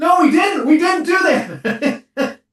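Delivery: mock very loud, very slow, very high shrill defensiveness. Retelling how the pranked guys answered: imitating a defensive denial. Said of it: "you guys started getting defensive".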